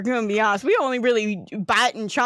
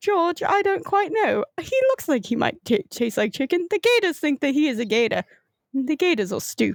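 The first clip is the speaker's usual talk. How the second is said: put-on, high-pitched British accent; 5 semitones higher than usual. Voicing a crocodile named Michael in a game: British accent. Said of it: "I have to go back to British".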